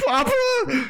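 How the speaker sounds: acted, very high, drawn-out sobbing cry. Playing a character who starts crying about his papa: crying in character. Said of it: "I start crying".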